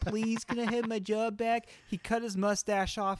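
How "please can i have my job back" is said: humble, earnest, begging pleading. Retelling a football player begging at the door for his job: imitating Minshew begging. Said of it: "he's begging and pleading".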